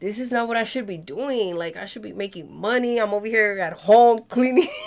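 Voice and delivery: acted-out tearful, upset crying voice. Retelling past phone calls to the other speaker: imitating own past crying. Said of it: "I would call you crying".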